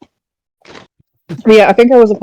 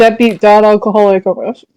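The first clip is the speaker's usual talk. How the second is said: ordinary delivery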